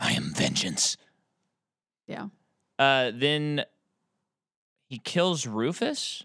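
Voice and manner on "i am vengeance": very low, rough superhero voice. Recounting a movie character's lines to a friend: Batman voice. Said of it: "Sounds like Batman".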